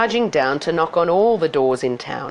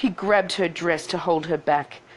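ordinary delivery

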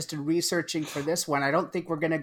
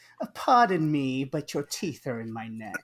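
put-on posh, snooty, upper-class snob voice; 2 semitones lower than usual. Saying a Roman Polanski film title, putting on a rich snob voice. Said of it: "putting on the rich snob voice".

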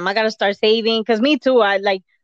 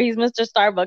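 ordinary talk, nothing marked

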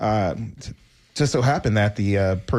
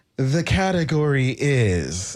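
dance-hall host's drawn-out announcer call; 4 semitones higher than usual. Retelling how a show's host announced each category: imitating the host's announcement. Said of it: "the way he would say it is".

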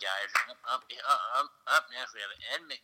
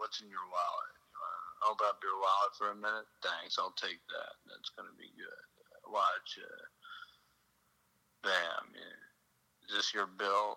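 breathy, hushed, soft, flat magician-like patter; 6 dB quieter than usual. Doing a magic trick bit for the other speaker: David Blaine impression. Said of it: "can I do my David Blaine impression?".

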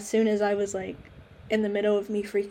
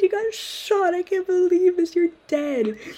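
put-on tearful crying voice, higher and louder; 10 semitones higher, 6 dB louder than usual. Retelling own words to a mother after a bad dream: imitating own crying. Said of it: "I immediately burst out in tears".

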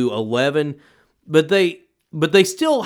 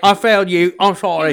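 put-on cockney accent, higher pitch, louder; 4 semitones higher, 5 dB louder than usual. Performing the actor's lines while discussing his accent with others, doing a Michael Caine impression. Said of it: "I'm Michael Caine".

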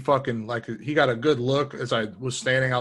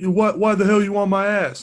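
loud, high, drawn-out hollering yell; 8 semitones higher, 6 dB louder than usual. Retelling a road argument, quoting the other driver: imitating a driver yelling. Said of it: "starts yelling".

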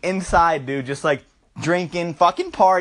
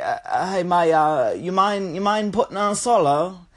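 very slow, bad, fake Australian accent. Retelling a story about a guy and a guitarist, in a shitty australian accent. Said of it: "shitty Australian, but it's funny".

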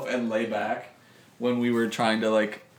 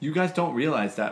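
usual speaking voice

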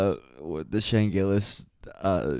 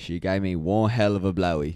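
fake, put-on Scottish accent. Acting out a great grandfather's story about Shayla: put-on Scottish accent. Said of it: "just turned Scottish".

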